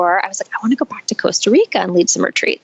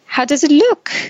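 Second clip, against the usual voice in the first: put-on thick French accent, pitched up; 7 semitones higher than usual. Retelling what a man said when he walked up, in his thick French accent. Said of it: "In his thick French accent".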